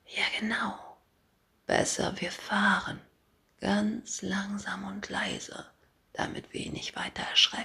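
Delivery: hushed whisper. Mimi answers the narrator, both of them whispering. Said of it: "Mimi flüstert ebenfalls".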